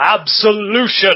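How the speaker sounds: booming, thunderous holler, loud and high. Narrator voicing a blinding golden glow calling out to the listener, in a thunderous hollering voice. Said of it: "it just hollers at you in a thunderous voice".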